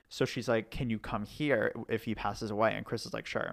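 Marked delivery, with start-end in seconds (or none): none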